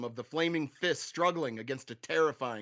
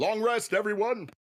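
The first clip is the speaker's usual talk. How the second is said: normal talking voice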